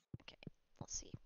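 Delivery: soft whisper.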